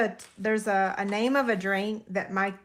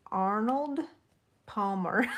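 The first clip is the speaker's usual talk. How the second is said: very slow, deliberate, drawn out, syllable by syllable. Trying to pronounce a drink's name, very slow careful delivery. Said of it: "I can say it if I say it really, really, really, really slow".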